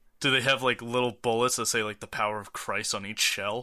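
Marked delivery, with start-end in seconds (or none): none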